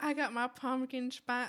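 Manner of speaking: slow put-on Southern sorority woman's drawl.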